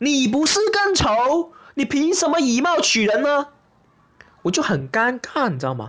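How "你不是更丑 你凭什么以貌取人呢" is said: high, slow, angry and outraged. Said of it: "我朋友一听头都爆了".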